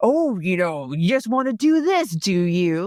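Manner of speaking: amped-up, slow character voice. Retelling a scene where Mister Burns is amped up: amped-up Mister Burns voice. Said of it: "Mister Burns is totally, like, ra-, amped up".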